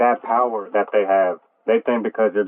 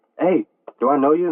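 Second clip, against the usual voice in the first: disrespectful, rude, pitched-up tone; 6 semitones higher than usual. Retelling how a woman challenged the speaker coming in for a backpack; mock-disrespectful tone. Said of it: "Like in a disrespectful tone".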